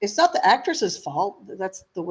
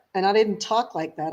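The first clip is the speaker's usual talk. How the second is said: plain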